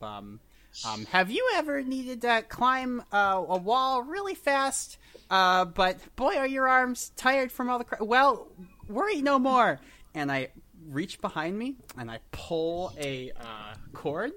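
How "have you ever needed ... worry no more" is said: very loud, high shout projected upward. Calling up to climbers from the foot of a wall: shouting up. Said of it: "I'm gonna shout up".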